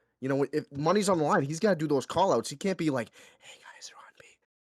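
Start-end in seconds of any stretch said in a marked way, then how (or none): 3.4-4.3 breathy, hushed whisper, barely voiced. Imitating a teammate doing call outs: mock whispering. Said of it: "I can't have that whisper stuff".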